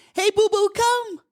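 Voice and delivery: cheerful, jolly, very high voice. Showing how to call your dog back to you, in a happy, jolly tone. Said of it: "call the dog to you in a happy, jolly tone".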